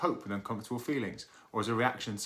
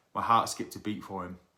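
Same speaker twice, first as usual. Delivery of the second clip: normal talking voice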